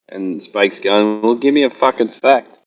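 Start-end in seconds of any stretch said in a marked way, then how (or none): 1.2-2.4 put-on Scottish accent. Retelling what Spake said to another guy, imitating Spake's Scottish accent. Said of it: "he speaks with his Scottish accent".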